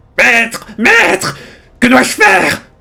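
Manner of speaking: shrill, creaky, rough, loud little voice. A game master voices Fouineur crying out to its master, shrill little voice. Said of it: "une petite voix criarde".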